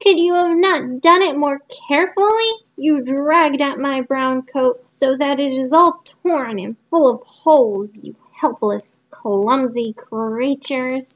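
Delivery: peevish, cross, scolding dwarf voice. Narrator reading the dwarf crying out to the girls: shrill dwarf voice. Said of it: "he cried in his shrill voice".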